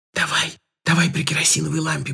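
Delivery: whispering. Katka chimes in to Uncle Kolya, whispering. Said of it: "прошептала Катька".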